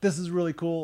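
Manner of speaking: ordinary talk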